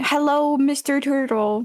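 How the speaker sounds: light, mild voice calling out from afar. In a role-play game, a player calls out to a turtle, yelling. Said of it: "I'm yelling".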